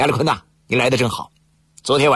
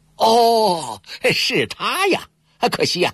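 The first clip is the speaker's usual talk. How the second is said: slow, high-pitched, feigned sudden dawning realization; 9 semitones higher than usual. A man pretends to recognize the gambler being described, feigned sudden realization. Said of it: "亚历坤故作知情的恍然大悟".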